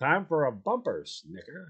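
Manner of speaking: sweeping, sing-song, rolling radio announcer delivery.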